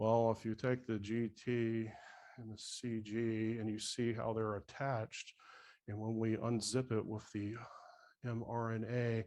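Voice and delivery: very slow, soft, flat radio-style monotone. Mimicking somebody the average person can't follow, in an NPR monotone voice. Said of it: "they got the N P R monotone voice".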